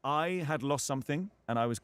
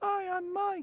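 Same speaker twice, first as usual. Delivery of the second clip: very high, tiny small voice. Speaker retelling first meeting someone, imitating Mike's little voice. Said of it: "I heard this little voice go".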